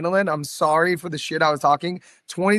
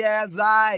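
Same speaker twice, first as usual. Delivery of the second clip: put-on Australian accent, higher pitch; 5 semitones higher than usual. Retelling a voiceover on a clip: fake Aussie accent. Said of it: "a fake Aussie accent".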